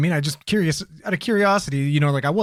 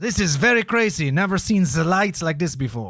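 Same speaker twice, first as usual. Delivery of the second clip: bad, fake, put-on French accent; 3 semitones higher than usual. Acting out a conversation, put-on French accent. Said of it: "your French accent has thrown me off so much".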